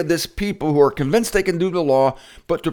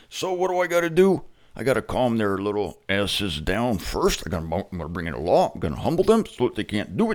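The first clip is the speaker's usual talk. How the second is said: put-on god voice, pitched lower; 7 semitones lower, 6 dB quieter than usual.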